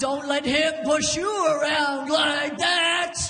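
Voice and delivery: put-on called out like an old-timey boxing announcer. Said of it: "like some kind of old-timey boxing announcer".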